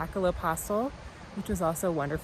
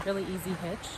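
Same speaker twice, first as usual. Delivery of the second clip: ordinary talk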